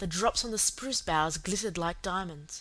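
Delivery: ordinary delivery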